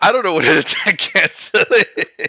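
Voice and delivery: laughing loudly, pitched high.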